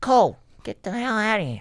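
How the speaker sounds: very high, squeaky put-on character voice, griping. Doing a bit about meatballs as Tony Soprano. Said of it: "you feel like fucking Tony Soprano".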